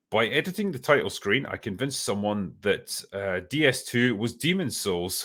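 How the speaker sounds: ordinary talk, nothing marked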